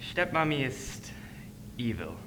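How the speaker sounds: soft, phony, put-on German accent. In a Hansel and Gretel skit, answering a question, fake German accent. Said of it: "these fake German accents".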